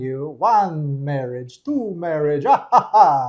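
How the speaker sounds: loud, slow, deliberate counting with an ah-ha-ha laugh. Teasing a guest about inheriting a fortune: the Count voice. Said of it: "the Count from Sesame Street".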